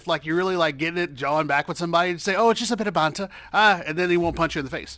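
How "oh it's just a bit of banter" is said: put-on British accent, higher pitch. Acting out how people argue in England: British accent. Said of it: "Now he's talking in a British accent".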